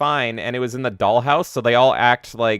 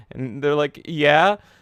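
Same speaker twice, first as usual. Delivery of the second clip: ordinary talk, nothing marked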